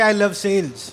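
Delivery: ordinary delivery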